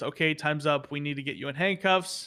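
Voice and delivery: normal talking voice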